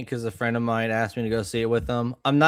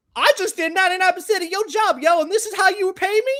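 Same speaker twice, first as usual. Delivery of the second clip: very high-pitched, put-on, fake New York accent; 4 dB louder than usual. Act out how the British actor talks once he takes on the suit, in Spider-Man's put-on New York accent.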